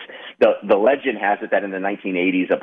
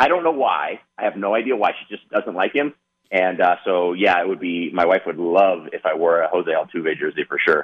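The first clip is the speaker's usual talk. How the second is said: normal talking voice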